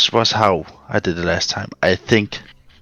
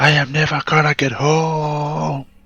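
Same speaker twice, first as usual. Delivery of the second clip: "home" pitched up and drawn out; 5 semitones higher than usual. Player in a tabletop game, still in character: yelling. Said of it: "I'm still yelling".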